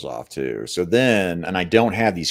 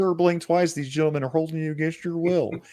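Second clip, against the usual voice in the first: very high, squeaky, drawling caricature voice; 10 semitones higher than usual. Joking about figures held in packaging: imitating Jacob. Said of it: "Jacob talks just like that".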